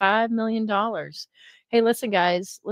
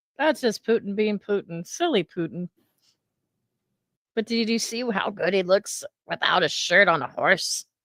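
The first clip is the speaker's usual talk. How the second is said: sarcastic, put-on gushing admiration, clearly ironic. Joking about Putin's wealth while another speaker criticizes him: sarcastic mock praise. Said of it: "And I'm being sarcastic".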